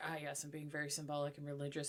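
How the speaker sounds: overblown, self-important, try-hard put-on villain voice. Acting out a villain trying too hard to look symbolic: put-on try-hard villain voice. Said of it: "have a villain Salubri that's doing that".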